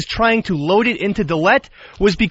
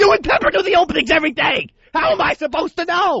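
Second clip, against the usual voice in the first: furious yelling, high and angry scream; 8 semitones higher than usual. Arguing about who did the openings, screaming. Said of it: "to the way you're screaming".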